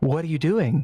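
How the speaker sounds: sugary, honeyed, saccharine sweet woman's voice. Voicing an unseen presence close behind a character, in a sweet saccharine female voice. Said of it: "This beautiful female voice".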